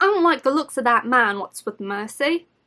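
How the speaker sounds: bad, weak, put-on Cockney accent. Reading her character's lines, in a bad cockney accent. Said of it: "I'm not good at Cockney accents".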